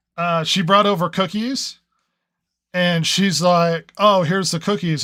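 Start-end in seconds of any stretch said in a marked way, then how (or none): none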